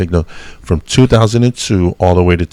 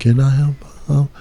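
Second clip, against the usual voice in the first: light, pitched-up little put-on voice; 7 semitones higher, 3 dB quieter than usual. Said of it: "I had a lighter voice".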